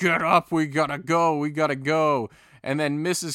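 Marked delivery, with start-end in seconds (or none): 0.0-2.3 very slow, loud, drawn-out yell with go held long. Telling a story where a man yells at his fallen reindeer, retelling a yell. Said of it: "he starts yelling".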